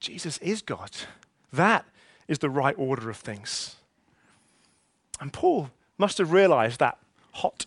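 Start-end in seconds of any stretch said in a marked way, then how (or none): 0.0-3.8 low, disbelieving muttering. Imagining Paul muttering to himself after being knocked down; imitating a disbelieving mutter. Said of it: "disbelievingly muttering to himself".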